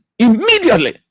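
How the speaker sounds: stress on immediately. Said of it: "Underline the word immediately".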